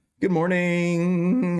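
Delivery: cracking, breaking voice. Greeting someone first thing in the morning, voice cracking. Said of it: "my voice is cracking".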